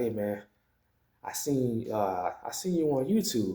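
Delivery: hushed undertone. Retelling their boss speaking to them at work, retelling a lowered voice. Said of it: "kind of lowers his voice".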